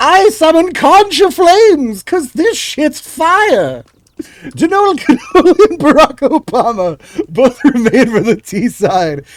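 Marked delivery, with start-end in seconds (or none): 0.0-3.8 high wizard voice with fire drawn out. Caster calling a game match, in a wizard voice. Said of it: "I love that wizard voice".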